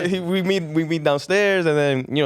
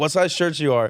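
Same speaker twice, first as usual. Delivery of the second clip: ordinary delivery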